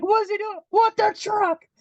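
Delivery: put-on, shrill, high, passionately angry, furious scream. Recounting a moment when Joey got angry at a truck: retelling Joey's angry screaming. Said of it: "he's just like screaming".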